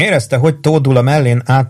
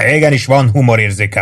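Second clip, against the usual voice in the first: ordinary delivery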